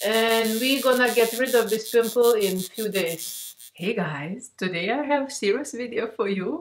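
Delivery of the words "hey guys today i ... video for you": giggling, laughing through the words. Greeting viewers at the start of a video: laughing while talking. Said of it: "I know I'm laughing".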